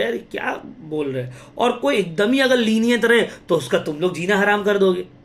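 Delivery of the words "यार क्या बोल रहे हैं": put-on soft, irritated grumble like a kid. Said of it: "बच्चा चिड़चिड़ा जाएगा".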